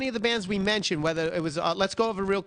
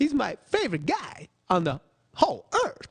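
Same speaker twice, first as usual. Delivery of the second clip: bad put-on voice, sing-song with pitch swooping all over; 3 semitones higher than usual. Trying the impression a friend does well: Christopher Walken impression. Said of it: "Christopher Walken impression".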